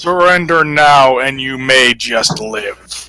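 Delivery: deep, low, ultimatum-like delivery. Voicing a man calling out from a ship, booming voice. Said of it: "His voice booming out from this ship".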